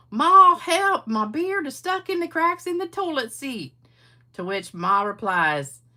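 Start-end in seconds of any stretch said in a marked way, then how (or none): 0.2-3.8 very high, shrill, hollering hillbilly voice. Telling a joke, acting out pa yelling to ma for help: yelling in a hillbilly voice. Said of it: "I thought that was a good hillbilly voice I used".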